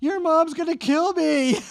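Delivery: piercing scream, very high and very loud. Telling a drowning story, acting out the mother's friend screaming: imitating someone screaming. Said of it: "and she was screaming".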